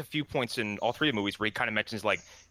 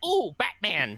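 high, thrilled, excited grandma voice; 8 semitones higher, 3 dB louder than usual. Picturing a grandma seeing a Batman movie: imitating an excited grandma. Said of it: "a grandma going".

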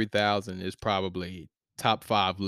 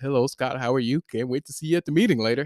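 mock proper polished voice, higher pitch; 4 semitones higher than usual. Showing the way of talking they will not use: mock proper formal voice. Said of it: "I'm not finna talk like this".

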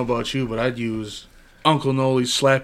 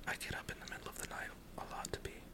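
soft, unvoiced whisper. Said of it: "Let's just whisper about him".

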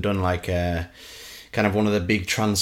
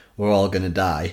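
ordinary talk

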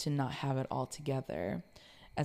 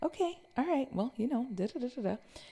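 very high, swooping sing-song with fake pleasantness; 11 semitones higher than usual. Retelling how she sounded when upset, imitating her own fake-pleasant tone. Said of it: "the tone of my voice would be like".

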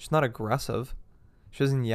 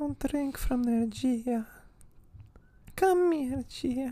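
put-on feeble old woman voice, very high; 14 semitones higher than usual. Quoting how her grandmother calls her by name, imitating a frail grandma. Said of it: "Why does she sound frail?".

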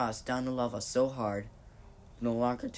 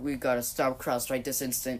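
ordinary delivery

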